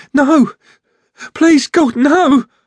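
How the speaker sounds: very high-pitched, panicked screaming cry. A woman cries out as Jack enters the room and slams the door; panic-pitched shout. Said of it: "her panic-pitched voice scorching the ceiling".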